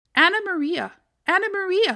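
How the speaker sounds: loud, high-pitched, squeaky rat voice. The rat, with Tom Kitten tumbled into its bed, squeaking rat voice. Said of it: "squeaked the rat".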